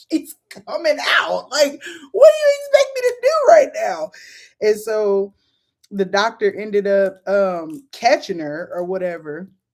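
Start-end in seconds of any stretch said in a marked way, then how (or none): 0.1-4.1 very high, rising yell through pain. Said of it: "I'm just yelling anything 'cause it hurts".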